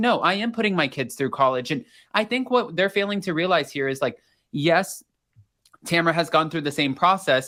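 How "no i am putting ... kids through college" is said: ordinary talk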